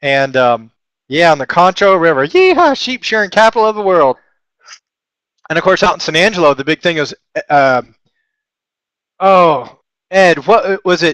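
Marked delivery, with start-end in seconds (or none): 2.3-4.2 high, put-on West Texas twang. Describing where the grandparents lived in San Angelo, in a put-on Texas twang. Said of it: "how many different accents within a one minute period".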